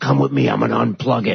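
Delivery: put-on drunk man's voice. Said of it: "drunk out of his mind".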